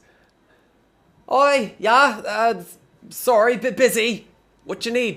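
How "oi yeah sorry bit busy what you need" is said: high, loud, harried busy cook voice. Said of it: "And he goes".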